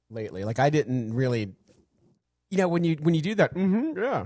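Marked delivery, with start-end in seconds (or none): 3.5-4.2 put-on dismissive, passive-aggressive mm-hmm, pitched high. Mocking how the other speaker agreed: imitating a passive aggressive agreement. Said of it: "but you make me feel like an asshole".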